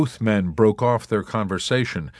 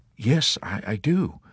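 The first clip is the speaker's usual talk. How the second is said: guilty-sounding, quieter delivery; 3 dB quieter than usual. The chaplain answers a corporal's complaint; assured guiltily. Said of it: "the chaplain assured him guiltily".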